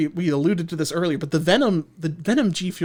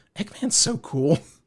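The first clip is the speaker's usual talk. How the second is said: mock mumbling under breath. Retelling how a viewer reacted during a cartoon reveal: imitating someone mumbling under breath. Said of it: "mumbled under her breath".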